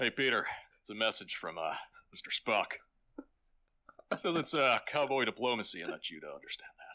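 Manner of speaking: put-on deep, deadpan voice. Repeating the quoted line back as a Patrick Warburton voice. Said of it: "why did you say that like Patrick Warburton?".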